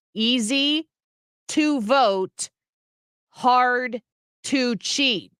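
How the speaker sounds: very slow, drawn-out, deliberate phrasing. Repeating the same line once more, said very slowly. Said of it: "I'll say it even slower".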